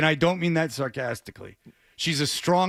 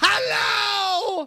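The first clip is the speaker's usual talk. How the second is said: belted out loudly, way up high. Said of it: "[name]'s [name] voice is very reminiscent of one of [name]".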